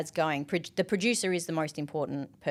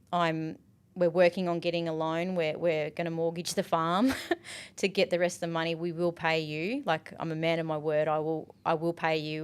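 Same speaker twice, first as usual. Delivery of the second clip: ordinary talk, nothing marked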